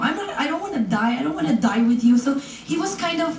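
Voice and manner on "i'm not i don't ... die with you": ordinary talk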